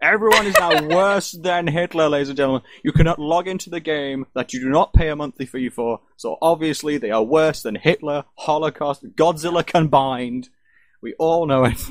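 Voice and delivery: high-pitched, loud ranting shout at full force. Ranting about players blaming a game's login failure, shouting. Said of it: "I'll stop shouting now".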